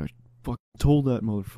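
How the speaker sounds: grumbling mutter, as if to oneself. Retelling a man in construction clothes who sat behind them, imitating him muttering. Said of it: "he's like muttering to himself".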